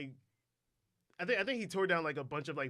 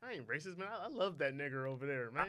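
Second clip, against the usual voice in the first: ordinary talk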